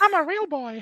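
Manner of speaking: very high, squeaky cartoon puppet voice. The speaker does a voice that a listener praises, in Pinocchio voice from Shrek. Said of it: "You do it really well".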